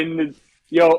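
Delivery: normal talking voice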